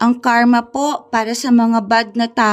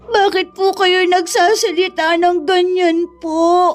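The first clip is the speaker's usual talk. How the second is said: tearful voice, higher; 7 semitones higher than usual. Asking Lolo why he is speaking that way: crying while talking. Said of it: "bakit ka umiiyak?".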